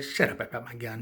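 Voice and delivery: ordinary talk, nothing marked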